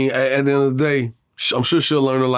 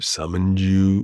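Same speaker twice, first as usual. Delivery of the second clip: mock dramatic theatrical voice, lower; 5 semitones lower than usual. Acting out the talk with the daughter's older man: put-on theatrical voice. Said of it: "with a real, like, theatrical voice".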